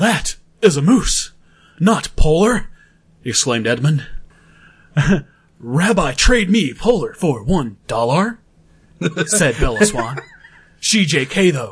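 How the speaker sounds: dramatic, theatrical put-on actor voice. Reading a silly fan story aloud for friends: William Shatner voice. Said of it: "I have to do this as William Shatner".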